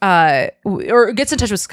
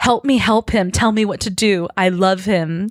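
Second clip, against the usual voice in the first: plain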